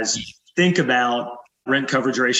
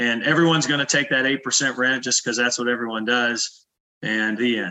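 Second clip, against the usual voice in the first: normal talking voice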